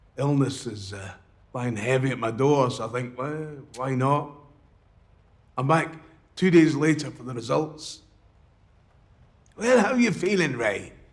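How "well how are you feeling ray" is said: strong put-on Irish accent, pitched up. Speaker, back two days later for results, quotes the person greeting him in a strong irish accent. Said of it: "strong Irish accent".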